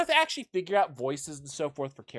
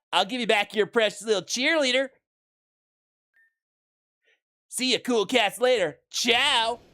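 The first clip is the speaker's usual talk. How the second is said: surfer dude voice, much higher pitched; 8 semitones higher, 4 dB louder than usual. Voicing a game character speaking to the players, in a surfer dude voice. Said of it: "Very surfer dude".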